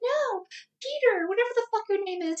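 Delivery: very high, squealing, panicked pleading voice.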